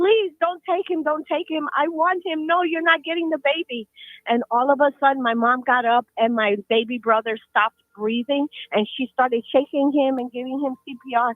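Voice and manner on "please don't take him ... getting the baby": frantic, hysterical, high-pitched screaming. Retelling a mother begging a shadow not to take the baby: imitating hysterical screaming. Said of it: "my mom was just screaming hysterical".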